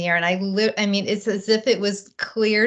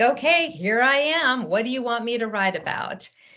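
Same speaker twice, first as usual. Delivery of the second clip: mock sarcastic and a bit flustered; 3 semitones higher than usual. Retelling sitting down at the computer: retelling a flustered, sarcastic remark. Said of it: "kind of flustered and sarcastically".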